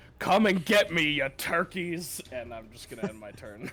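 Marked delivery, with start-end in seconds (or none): 0.2-2.2 yelled taunting tone, much louder, higher. A player's character yells out into the room, then ends the turn: yelling taunt. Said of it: "I'm going to yell out into the room".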